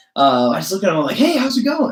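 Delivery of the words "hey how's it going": play-acted, very high, gushing, over-the-top excitement. Retelling greeting a hotel janitor: imitating own over-the-top enthusiastic greeting. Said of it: "over the top, enthusiastic and dramatic".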